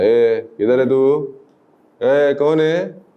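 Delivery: slow, menacing, threatening thug voice.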